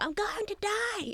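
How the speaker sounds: very high, very slow, drawn-out panicked wail. Describing a clip of a man on a plane, imitating him screaming. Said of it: "he's on the plane and he's screaming".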